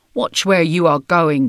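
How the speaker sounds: grumbled, grumbling words. Reading a children's story, an old wombat in a bush grumbling at a kangaroo. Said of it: "he grumbled".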